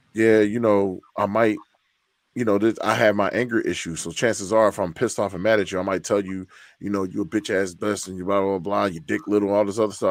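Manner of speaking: usual speaking voice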